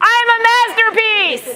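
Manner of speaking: eager, enthusiastic, very high and loud. An audience member repeats the affirmation when asked for more, enthusiastic. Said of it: "we can say it with a little bit more enthusiasm".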